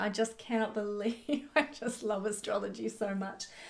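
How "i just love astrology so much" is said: soft, delighted giggling through the words. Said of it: "I keep laughing".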